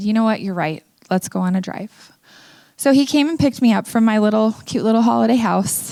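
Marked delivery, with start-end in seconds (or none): none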